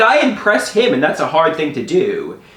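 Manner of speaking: ordinary talk, nothing marked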